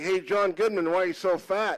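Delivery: ordinary delivery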